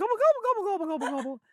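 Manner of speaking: very high, loud backwards gobble. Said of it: "I am going backwards".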